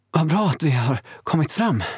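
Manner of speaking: out of breath. Marcus, reaching the village with Diomeda, speaks panting. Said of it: "flåsade Marcus".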